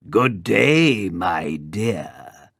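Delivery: growled voice, drawn out. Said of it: "growled the wolf".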